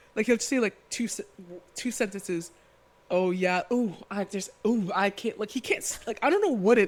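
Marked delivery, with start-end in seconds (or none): 3.1-5.3 slow, unhurried, drawn-out, stop-start halting phrasing. Mocking someone's confessionals on a show: imitating Corbin's way of talking. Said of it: "It's just him being like".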